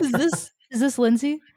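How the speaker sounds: grumpy, put-out man's voice. Retelling an unexpected call from a California number, imitating Kevin's grumpy voice. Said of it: "grumpy man voice".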